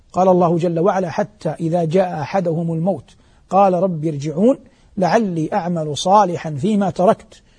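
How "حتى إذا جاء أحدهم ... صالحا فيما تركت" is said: ordinary talk, nothing marked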